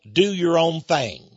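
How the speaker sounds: put-on slight Texas twang. Quoting a sixties and seventies slogan with a slight Texas twang. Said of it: "A little Texas twang there".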